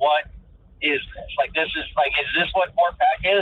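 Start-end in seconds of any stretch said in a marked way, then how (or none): none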